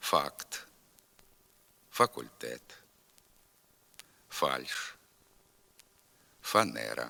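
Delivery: slow, spaced, word by word with long pauses. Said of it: "Тепер повторюйте за мною".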